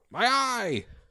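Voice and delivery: shrill, very high pained screech. After the creature's eye is hit, the narrator voices it screeching in pain. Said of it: "He screeches in pain".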